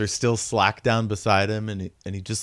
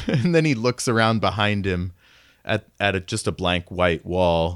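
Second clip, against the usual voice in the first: ordinary talk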